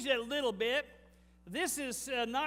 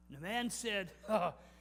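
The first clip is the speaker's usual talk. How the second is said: ordinary delivery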